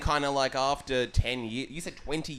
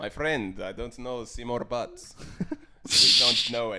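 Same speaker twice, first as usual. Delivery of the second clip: put-on German accent, played for laughs. Acting out a call from someone looking for a relative: put-on german accent. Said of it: "I'm doing a German accent now".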